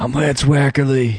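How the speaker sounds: creepy, sinister put-on predator voice. A podcast host introduces himself on the show, creepy predator voice.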